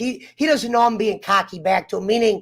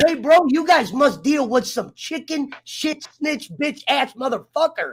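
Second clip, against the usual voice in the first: put-on pissed-off, heated, worked-up angry rant; 3 semitones higher than usual. Retelling insulting the cops after an arrest: getting angry. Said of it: "I'm sorry I'm getting so fucking pissed".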